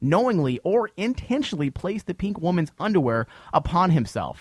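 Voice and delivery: ordinary talk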